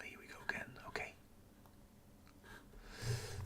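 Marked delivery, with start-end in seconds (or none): 0.0-0.7 soft whisper. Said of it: "I'm whispering because everybody's asleep".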